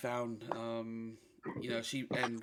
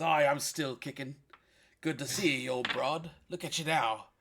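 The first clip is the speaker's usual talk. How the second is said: put-on loud, booming old sea-dog pirate voice; 3 semitones higher, 5 dB louder than usual. Voicing Jimmy greeting an old friend: voicing Jimmy, a pirate. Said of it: "he says".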